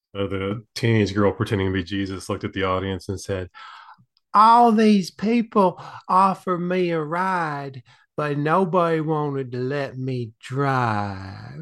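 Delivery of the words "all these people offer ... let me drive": fake deep Southern accent. Speaker retells a teenage girl playing Jesus delivering the closing line, in a put-on deep Southern accent. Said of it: "imagine this like in a deep South accent".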